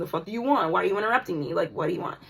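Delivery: acted, icy, callous and dismissive woman's voice. Retelling how a woman greeted the speaker: imitating a cold, callous woman. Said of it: "that's the energy that I was getting".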